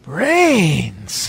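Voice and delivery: excited, high, loud cry, brains drawn out. Recalling a favorite movie scene, imitating excited Tar Man. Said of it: "He's like all excited".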